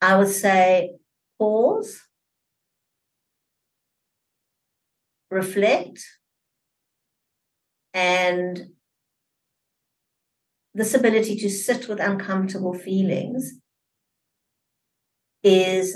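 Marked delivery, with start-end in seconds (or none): 1.4-16.0 slow, careful, deliberate, unhurried, measured delivery. A guest answers the host's question for listeners; slow, careful delivery. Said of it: "I'm saying it slowly".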